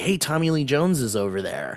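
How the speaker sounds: usual speaking voice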